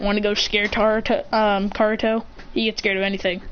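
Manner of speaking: ordinary delivery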